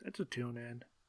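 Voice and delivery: resigned, dejected, weary, defeated tone. Giving a verdict on a show, sounding defeated. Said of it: "You sound so defeated".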